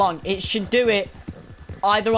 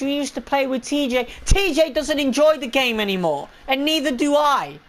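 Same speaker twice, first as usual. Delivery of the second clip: high, ranting, near-shouting outburst; 5 semitones higher than usual. Explaining to listeners why they no longer play the game, shouting. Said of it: "I'm shouting too much".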